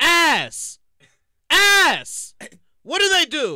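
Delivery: loud, high-pitched, heated rant.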